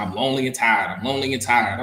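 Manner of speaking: plain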